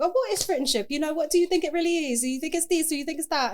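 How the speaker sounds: put-on little British accent. Retelling an old Instagram segment about friendship: little British accent. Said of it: "doing it in my little British accent".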